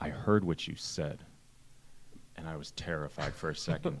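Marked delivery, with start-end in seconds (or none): 0.0-1.2 put-on stern voice, quieter. Retelling a father's words after a roller coaster ride: imitating dad speaking sternly. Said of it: "looks at me really sternly".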